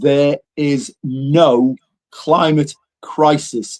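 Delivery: slow, deliberate, each word placed carefully. Repeating a claim to make the point, the speaker says it slow and deliberate. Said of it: "I'll say it again slowly".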